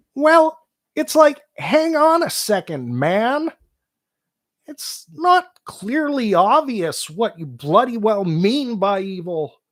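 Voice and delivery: earnest, impatient lecturing voice. Working on an impression, speaker restates a point in a Jordan Peterson voice. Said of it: "I'm working on my JP impression".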